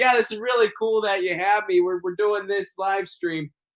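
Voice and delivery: high, rambling politician voice. Showing the others a pandemic-related impression of being on a show: Joe Biden impression. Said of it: "So that's my Biden impression".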